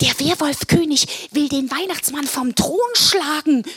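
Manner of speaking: blurted out, words bursting in a rush. Answering the goblin overseer's question, the narrator speaks; blurting it out. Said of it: "sprudelte es aus mir heraus".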